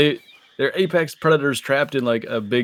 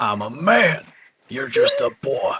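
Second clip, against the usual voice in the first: slow, drawn-out, swooping character voice; 3 semitones higher than usual. Quoting a game character during play: Arthur Morgan impression. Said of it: "That was a sick Arthur Morgan impre-".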